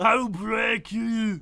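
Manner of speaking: put-on German accent. Voicing the detective character again: put-on Austrian-sounding accent. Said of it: "Yours sounds more like, uh, Austria".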